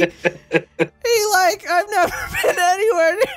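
high slow cartoon voice. Speaker offering to voice Shaggy with another voice: Morty voice for Shaggy. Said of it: "I can just do my Morty voice for Shaggy".

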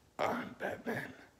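breathy, whispered hero voice. Doing impressions of characters: Batman voice. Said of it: "I can actually do Batman now".

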